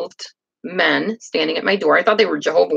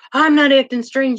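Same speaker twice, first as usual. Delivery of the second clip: put-on yelling, much higher pitched; 7 semitones higher, 3 dB louder than usual. Speaker retells a man yelling at them in the middle of a store, retelling his yell. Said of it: "he's like yelling at me".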